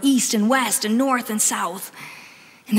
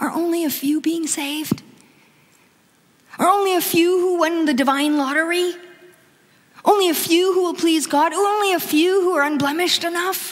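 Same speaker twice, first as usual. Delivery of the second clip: mock desperate, high, pleading tone; 6 semitones higher than usual. Speaker voices the questioner's plea to Jesus, acting out desperate questioning. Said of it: "hear the desperation in the questioner's voice".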